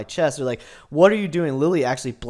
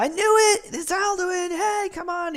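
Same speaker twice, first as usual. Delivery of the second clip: mock very high-pitched shout. Retelling how a character yells out to another: imitating a character yelling. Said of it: "Lily kinda yells out to Perdita".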